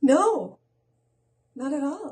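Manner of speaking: high sarcastic tone. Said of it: "Was that sarcasm again?".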